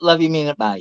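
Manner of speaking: put-on sarcastic, snarky tone. Quoting a streamer's usual sign-off to another speaker: imitating a snarky sarcastic sign-off. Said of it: "sort of snarky, sarcastic".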